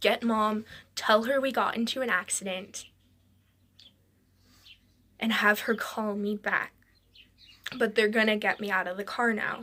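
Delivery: ordinary delivery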